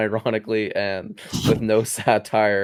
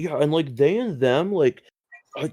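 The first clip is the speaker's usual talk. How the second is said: derisive rambling, getting more and more worked up; 6 semitones higher than usual. Retelling how Joe Rogan reacts to pronouns: imitating Joe Rogan. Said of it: "he's like".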